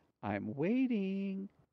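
sugary, sweet, high voice. In a told joke, a woman on the bed waits for the man, said sweetly. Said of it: "She says sweetly".

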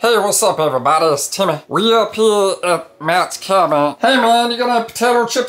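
very high, full cartoon voice. Opening a snow machining video, doing a favorite cartoon character: Meatball cartoon impression. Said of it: "This is my best impersonation of one of my favorite cartoon characters".

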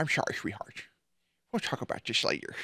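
half-whispered, hushed, breathy cartoon villain voice. Mocking a voice just heard by repeating its words: How the Grinch Stole Christmas voice. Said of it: "most How the Grinch Stole Christmas ass voice".

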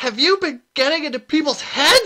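wild, furious, raging shriek, very shrill and loud. Narrator reads one woman accusing another of trickery, shrieking. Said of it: "she shrieked".

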